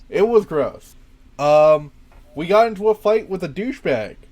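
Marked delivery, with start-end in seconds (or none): none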